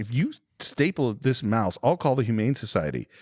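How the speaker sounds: ordinary delivery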